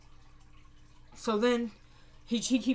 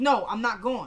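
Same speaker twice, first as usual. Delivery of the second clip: ordinary talk, nothing marked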